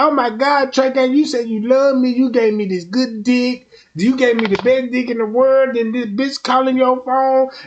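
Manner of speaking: acted-out crying, sobbing, whiny pleading tone. Retelling a partner's reaction to another woman calling the phone: imitating someone crying. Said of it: "You crying like a mother".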